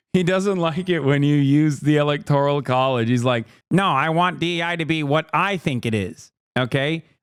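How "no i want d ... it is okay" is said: mocking, nerdy put-on voice. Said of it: "making a nerd voice".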